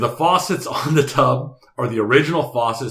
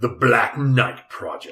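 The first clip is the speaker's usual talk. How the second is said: cool-sounding delivery, like announcing a title. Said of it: "It sounds cool when you say it that way".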